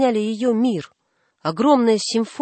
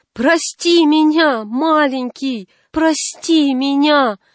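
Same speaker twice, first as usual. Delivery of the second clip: full-bodied, high-pitched crying out; 4 semitones higher, 4 dB louder than usual. A mother on her knees begs her little boy's forgiveness; crying out with whole body. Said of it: "закричала голосом всего своего тела".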